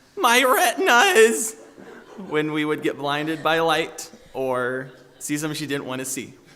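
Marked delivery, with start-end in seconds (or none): 0.2-1.6 high, slow, loud yell with a laugh. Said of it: "I'll also remember her yelling".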